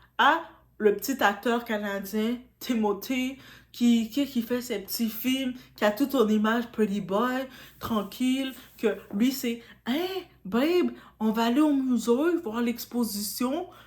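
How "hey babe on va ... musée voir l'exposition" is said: relaxed, chill Quebec French. Imagining how a Canadian actor talks: Timothy impression, Quebec accent. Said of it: "j'imagine dans ma tête qu'il parle comme ça. Donc, avec l'accent québécois que je vous sors".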